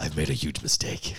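breathy, whispered voiceover voice. Quoting a catchphrase right after naming the actor: Will Arnett impression. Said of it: "Will Arnett".

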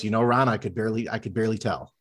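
put-on perfect deadpan. Retell the reply to Ron, who was audibly eating a hot dog on air, imitating Pat Hughes's deadpan. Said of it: "in that perfect deadpan of his".

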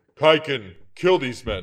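big, loud, booming voice. The narrator voices the man sitting under the tree, booming voice. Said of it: "His voice booms out".

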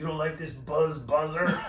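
fake, mock Mexican accent. Retelling what he'd say while doing the Road Runner, in a put-on Mexican accent. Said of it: "with his fucking Mexican accent on".

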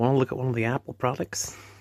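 put-on American shop-assistant accent. Describing staff in an Apple shop, doing a put-on American accent. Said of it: "Talking in the American accents".

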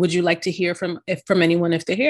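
ordinary talk

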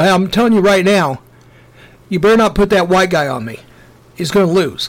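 put-on offended, angry, threatening tone. Retelling a basketball player's warning about who guards him: imitating someone getting mad. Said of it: "he'd get mad".

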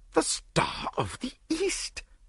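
very high, drawn-out gasp. A narrator voices Lord Yardley as Poirot produces the diamond; gasped. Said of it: "gasped Lord Yardley".

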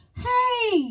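put-on high-pitched kid's calling voice. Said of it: "they're like".

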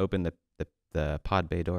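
normal talking voice

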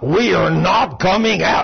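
firm, bold, masculine mannish voice. Retelling what a woman said when she turned to the right, bold masculine voice. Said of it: "in a very bold masculine voice".

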